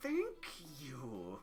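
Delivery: words squeezed out through clenched, gritted teeth. A player's character answers a compliment with thanks; through gritted teeth. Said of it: "She says through gritted teeth".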